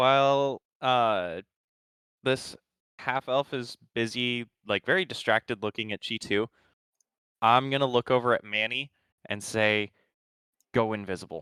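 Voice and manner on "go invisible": muttered quietly under the breath, lower. Telling a companion in character to go invisible: said under the breath. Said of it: "under my breath".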